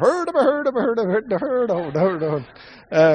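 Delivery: high-pitched mock Swedish cook babble, puppet-chef style.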